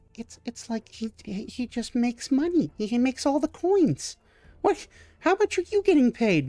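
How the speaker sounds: high-pitched voice of a small scaly kobold. Voicing a kobold server staring from behind the bar: kobold server voice. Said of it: "these green scaled kobolds".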